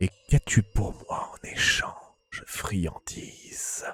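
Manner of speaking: hollow, cavernous voice that keeps shifting. In a cave, a voice answers a seeker of answers, cavernous, shifting voice. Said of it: "Tu entends une voix caverneuse, presque changeante".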